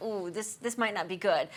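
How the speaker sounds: plain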